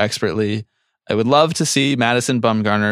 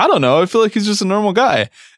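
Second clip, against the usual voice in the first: very high-pitched, squeaky voice; 10 semitones higher than usual. Retelling what the other speaker said earlier on the podcast: impression of the listener. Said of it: "that's my you impression".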